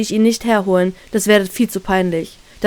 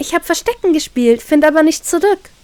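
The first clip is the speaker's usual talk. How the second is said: saccharine, honeyed, sugary sweet voice, pitched up; 6 semitones higher than usual. Reading a story aloud, answering a stranger who asked why she is alone: sugary sweet. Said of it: "antworte ich zuckersüß".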